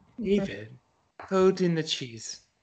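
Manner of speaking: stagey, theatrical put-on character voice. Told to say it tongue in cheek, the speaker tries a Moira impression. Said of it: "I'm supposed to be like Moira from".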